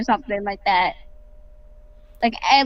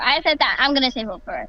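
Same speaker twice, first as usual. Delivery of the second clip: normal talking voice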